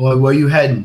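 very loud yelling out. Playing a traveler who yells out to a family on the road: yelling out in character. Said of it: "I'll yell out to him".

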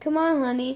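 ordinary delivery

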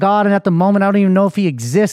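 ordinary talk

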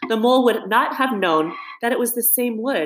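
plain reading voice

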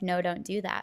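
ordinary talk, nothing marked

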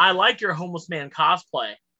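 normal talking voice

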